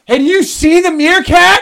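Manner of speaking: shrill, very loud, high-pitched yell. Retelling how someone nearby yelled right into the speaker's ear; imitating someone yelling. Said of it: "some guy yells in my ear".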